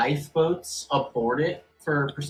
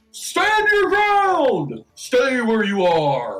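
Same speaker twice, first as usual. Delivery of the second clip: loud, high-pitched, barked shouting voice; 9 semitones higher, 6 dB louder than usual. Voicing the captain giving an order from outside: loud shouted order. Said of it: "very loud order from the captain".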